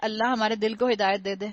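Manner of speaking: ordinary talk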